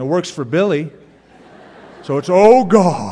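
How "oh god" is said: very loud, high, booming southern preacher drawl, God stretched. Mocking people who get in a pulpit and put on a sudden southern accent. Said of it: "suddenly get a southern accent".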